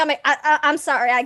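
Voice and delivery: choked-up, slow, halting stammer, regaining composure. Roleplaying a character pulling away from their mother, composing oneself, stammering. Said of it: "start composing myself".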